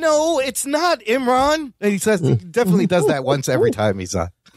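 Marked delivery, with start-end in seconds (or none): 0.0-1.7 passionate, very slow, high-pitched heated delivery. Quoting how a regular disagrees with the host: imitating Matt Delhauer disagreeing. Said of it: "I just love when he goes".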